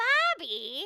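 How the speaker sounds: put-on loud, doting Minnesotan accent. Quoting a cartoon mom calling her kid: Minnesotan accent as Bobby's mom. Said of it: "so his mom had this accent".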